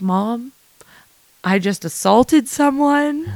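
acted-out, slow, tearful crying. Retelling a call to mom after an ejection, imitating own crying. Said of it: "I start crying".

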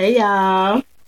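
playful, comical voice. Greeting the podcast audience with a comical greeting. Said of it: "She all comical".

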